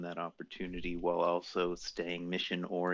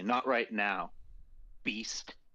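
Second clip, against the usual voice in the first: airy, dismissive, brushing-off tone; 3 semitones higher than usual. Speaker, in character, brushes off another character, dismissive, shooing away a servant. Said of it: "like you know I would shoo away a servant".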